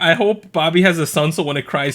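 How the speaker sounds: normal talking voice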